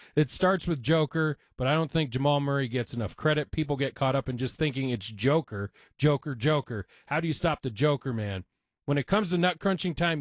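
plain

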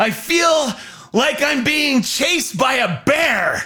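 held-back, high, drawn-out half yell. Retelling what a man said after stepping off and circling; retelling a quiet half-yell. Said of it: "he kind of sort of half yells, but sort of quietly".

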